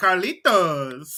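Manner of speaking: over-the-top, exaggerated Spanish telenovela woman's delivery. Retelling how a Spanish teacher called out a name: exaggerated Spanish telenovela woman voice. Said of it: "she says it in the most, like, exaggerated".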